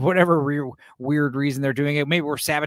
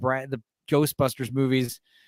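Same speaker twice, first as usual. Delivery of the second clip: ordinary delivery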